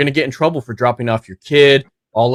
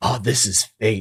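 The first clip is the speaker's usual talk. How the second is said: put-on overdramatic voice, quieter; 5 dB quieter than usual. Retelling what a general said on learning a soldier was a civilian: imitating an overdramatic general. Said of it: "so overdramatic and he's like".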